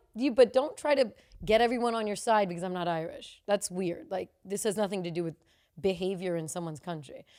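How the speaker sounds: normal talking voice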